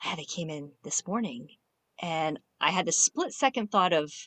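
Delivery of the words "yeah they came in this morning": hushed, soft stage half-whisper. Retelling a reply given while a child is close by: imitating a half-whisper. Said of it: "kinda whispering 'cause Max is close by".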